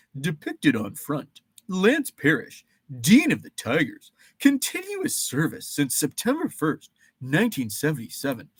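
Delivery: goofy, swooping, cartoonish sing-song voice. Reading a Tigers team leader card aloud: goofy voice. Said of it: "So we would like say it in goofy voices".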